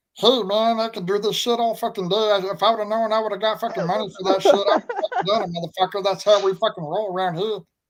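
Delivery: high, squeaky, chipmunk-like cartoon voice. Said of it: "I was trying to sound like the Chipmunks back in the day, so I made that voice".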